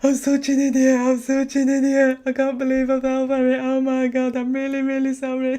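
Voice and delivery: acted tearful crying. Retelling ringing the bank back after being fooled, retelling dramatic crying. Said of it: "crying down the phone, like proper dramatic".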